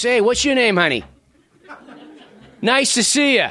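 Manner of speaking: Merrimack Valley accent. Showing how people from their home area talk: blue-collar Merrimack Valley accent. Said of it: "where they all friggin' talk like this".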